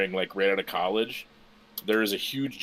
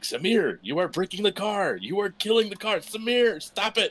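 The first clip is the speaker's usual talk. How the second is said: put-on increasingly agitated voice, higher pitch; 12 semitones higher than usual. Retelling a rally video's co-driver scolding the driver: imitating an agitated co-driver. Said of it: "Just increasingly more agitated".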